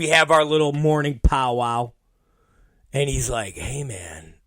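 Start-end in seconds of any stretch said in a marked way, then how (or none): 3.5-4.2 gentle, caring, deep, hushed, low and soft. Retelling the producer's greeting at their morning meeting, imitating Mike Moran's caring voice. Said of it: "with this nice, caring voice".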